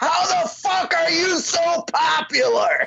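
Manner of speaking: high, slow, crying scream.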